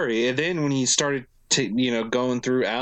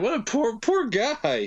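much higher, pitying sigh. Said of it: "You're just like".

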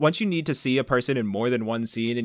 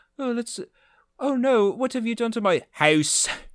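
mock Irish accent, higher pitch; 10 semitones higher than usual. Imitating an actress slipping into her Irish accent. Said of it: "she says something with an Irish accent".

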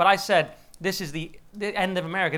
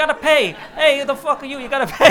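very loud, high, shrieking, belted gangster voice; 9 semitones higher, 9 dB louder than usual. Retelling a speech answer about paying NATO bills: imitating Trump as Joe Pesci. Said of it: "He basically went full Joe Pesci".

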